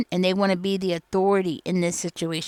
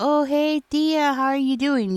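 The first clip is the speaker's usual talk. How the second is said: play-acted warm, friendly, welcoming tone, pitched up; 7 semitones higher than usual. Telling someone how they might greet a person, imitating a warm welcoming greeting. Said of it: "Because you're so warm and welcoming".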